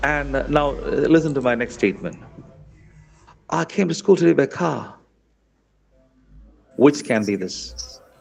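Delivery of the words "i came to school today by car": slightly British English accent, pitched a bit up. Saying a test sentence for listeners to judge its accent, in a British-sounding accent. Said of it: "it sounds like British".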